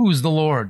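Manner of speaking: normal talking voice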